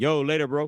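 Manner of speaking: full-on, loud, high holler. Calling goodbye to friends heading out of the shop: yelling into the mic. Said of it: "I didn't mean to yell that into the mic".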